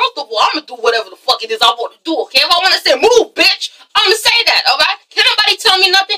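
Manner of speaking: mock cocky, brash, defiant tone. Recapping an episode, acting out Tommy's retort: imitating Tommy being defiant. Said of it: "And Tommy's like".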